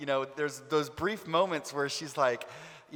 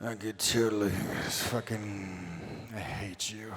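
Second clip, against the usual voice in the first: deep, raspy voice at a very slow pace; 6 semitones lower, 3 dB quieter than usual. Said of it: "It probably would be raspier than that, though. ... like a [name]".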